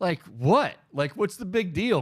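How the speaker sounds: put-on high, snotty, smart-mouthed kid voice. Retelling a story, the speaker quotes a kid getting smart with a man; imitating a kid's attitude. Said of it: "Getting attitude".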